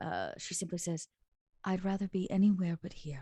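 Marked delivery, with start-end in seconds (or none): 1.6-3.2 whispered line. Voicing a character who leans in during an introduction: whispering in character. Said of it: "in French she whispers".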